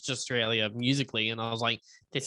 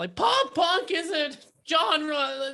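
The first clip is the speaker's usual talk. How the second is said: very high, whiny put-on voice; 4 dB louder than usual. Retelling a rehearsal while someone randomly played a Midwestern riff, in a whiny voice. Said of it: "I was like in that whiny voice".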